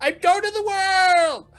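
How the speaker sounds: tiny, very high little goat creature voice. Narrating as the group soars into the sky: little goat voice. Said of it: "you hear this little goat voice".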